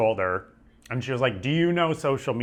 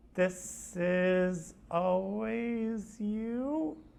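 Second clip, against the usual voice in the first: put-on woman's voice, creepy and menacing, higher, quieter; 9 semitones higher, 9 dB quieter than usual. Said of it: "like, in a scary movie, slowly turns to me".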